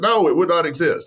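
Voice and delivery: loud scream. Retelling listening to a podcast question in the truck: retelling own screaming at radio. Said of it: "I'm screaming at my radio".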